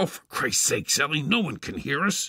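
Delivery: forceful, loud stage whisper. A father retorts to the mother, who fears being overheard, in a loud whisper. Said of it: "My father retorted in the same loud whispered tone".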